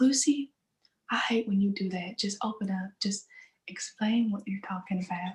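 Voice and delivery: put-on Southern US accent. Retelling what he says to her when she gives up explaining, in a southern accent. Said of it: "say it in that southern accent?".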